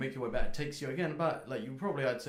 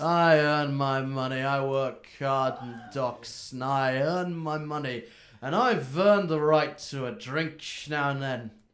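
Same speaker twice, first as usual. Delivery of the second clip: acted drunk voice, louder; 6 dB louder than usual. In a fantasy role-play, a dock-working character answers the party: acting drunk. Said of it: "He's drunk".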